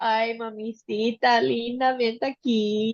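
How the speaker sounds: put-on babyish talk, slow. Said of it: "I mostly go like".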